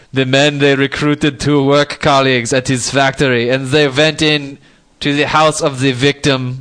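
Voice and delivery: put-on German accent. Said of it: "people listening really do think there's a German person".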